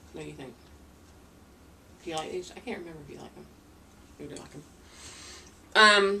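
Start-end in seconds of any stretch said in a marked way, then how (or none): 0.1-3.4 mouth full, much quieter. Speaker eating a snack asks the other person's opinion, talking with mouth full. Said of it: "Shame on me for talking with my mouth full".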